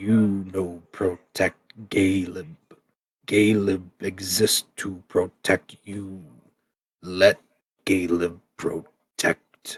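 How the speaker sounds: super gravelly, rough, soft stone creature voice. The golem looks at the party and speaks, in a super gravelly Galeb voice. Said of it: "in a super gravelly voice".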